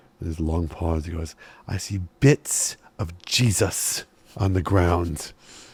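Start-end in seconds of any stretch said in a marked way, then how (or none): 1.7-5.3 grave, slow, utterly humorless, deadly serious delivery. Retelling what a monk told the group, imitating a deadly serious monk. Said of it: "Not an ounce of humor in his voice".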